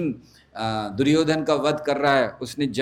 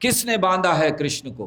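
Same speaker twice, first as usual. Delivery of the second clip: angry, pitched-up shout; 5 semitones higher than usual. Retelling how Balram angrily asked Yashoda a question: retelling an angry shout. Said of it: "बहुत जोर से चिल्लाकर यशोदा से पूछा".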